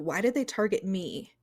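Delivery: ordinary delivery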